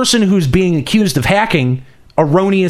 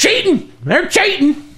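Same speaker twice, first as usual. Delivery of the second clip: put-on very high old hillbilly voice; 12 semitones higher than usual. Describing how people calling out cheating sound to the speaker, in an old hillbilly redneck voice. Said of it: "That's how I hear everyone who's like".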